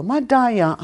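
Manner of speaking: madaya with the second syllable -da- stressed. Teaching the Nakota word madaya, stress on second syllable of madaya. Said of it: "you make a emphasis on the second syllable".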